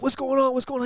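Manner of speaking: very high shout, said twice. Retelling yelling at the spotter during a race: retelling own yelling. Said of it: "I'm yelling at Tristan".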